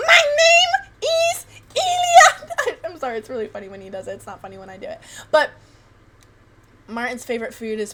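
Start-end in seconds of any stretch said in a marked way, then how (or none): 0.0-2.8 put-on very high, loud, slow old man voice. Retelling a friend's impression of his grandpa, in a really high-pitched grandpa voice. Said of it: "a really high pitched voice".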